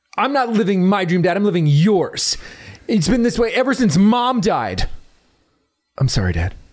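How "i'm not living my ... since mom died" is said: dramatic, theatrical delivery with swooping pitch. Re-enacting a movie scene on request, the other playing Dad: dramatic recreation of a movie line. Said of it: "I have to get into character".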